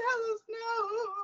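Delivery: very high, tearful, fake bawling. Joking about mourning a character's death, retelling crying: mock bawling. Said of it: "bawling my eyes out".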